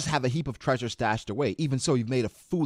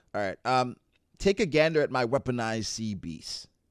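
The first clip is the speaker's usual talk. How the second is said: ordinary talk, nothing marked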